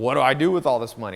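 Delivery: loud, freaked-out excitement, panicked blurting.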